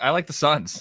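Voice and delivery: words broken by little giggles. Giving a bet pick when asked, giggling while talking. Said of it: "I'm giggling 'cause".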